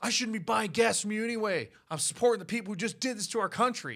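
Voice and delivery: hostile screaming rant. Retelling how people at gas stations screamed at workers: imitating someone screaming. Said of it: "screaming at them".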